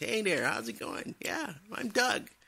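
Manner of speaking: squeaky, very high-pitched put-on voice. Retelling meeting the manager at a first job: imitating Doug. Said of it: "he talked like this".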